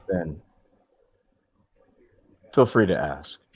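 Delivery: smooth, suave, debonair gentlemanly delivery. Speaking in character to her after past conflict: debonair. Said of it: "in my most, uh, debonair way".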